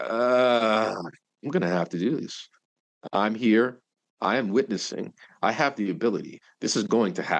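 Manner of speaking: plain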